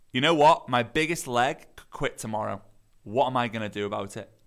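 ordinary delivery

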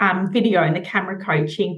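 ordinary delivery

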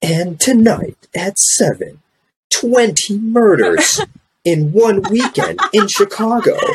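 very high, dramatic, sing-song news-anchor cadence. Imitating the news heard in the background at home: classic news-anchor tonality. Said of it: "you hear the classic news tonality".

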